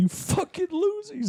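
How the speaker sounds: mock, very high ranting outburst. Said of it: "He just goes off in the mirror".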